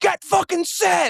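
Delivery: very high, acted-out screaming. Retelling a Falcons executive yelling at two guys in the conference room corner, imitating a scream. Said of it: "He like screams it".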